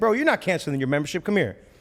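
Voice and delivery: sarcastic, aggressive, swooping tough-guy delivery. Retelling stopping a member who was canceling: retelling own sarcastically aggressive line. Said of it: "kinda sarcastically aggressive".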